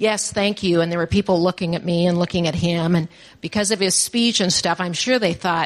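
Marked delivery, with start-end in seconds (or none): 0.0-0.8 put-on flat deadpan, slower. Retelling a man's reply after the speaker offered help, imitating a deadpan reply. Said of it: "he just played deadpan".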